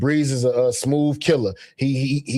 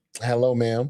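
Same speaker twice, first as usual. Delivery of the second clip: mock sarcastic tone, lower; 3 semitones lower, 3 dB quieter than usual. Retelling a show character's greeting: imitating a sarcastic greeting.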